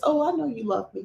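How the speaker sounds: small, sweet put-on voice, slightly creaky. Speaker imitating how she would answer, imitating her sweet little voice. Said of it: "in a sweet little voice".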